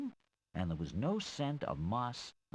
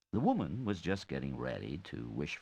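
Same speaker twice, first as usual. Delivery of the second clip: usual speaking voice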